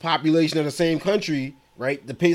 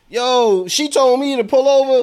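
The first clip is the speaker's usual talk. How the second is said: high, loud, furious ranting. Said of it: "I came with the fury".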